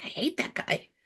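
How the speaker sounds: very quiet, hushed, breathy whisper. Retelling a remark whispered during a movie: retelling a whisper. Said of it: "I whispered to Jack".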